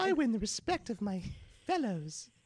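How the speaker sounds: put-on high, swooping, over-the-top caricature British accent. Talking about passionate bakers, then slipping into an exaggerated british accent. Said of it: "Not a British accent, but a caricature of a British accent".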